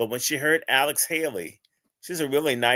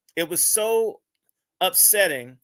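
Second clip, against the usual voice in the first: normal talking voice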